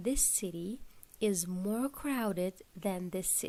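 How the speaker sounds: ordinary talk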